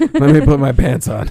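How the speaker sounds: put-on nonchalant tone. Retelling how a character opens the door to the military: imitating a nonchalant tone. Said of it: "so nonchalant".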